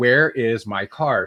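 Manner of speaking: play-acted furious, angry, very drawn out, slow. Retelling demanding to see the car from hotel staff: imitating own angry demand. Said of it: "I was mad enough".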